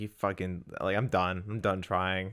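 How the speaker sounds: ordinary talk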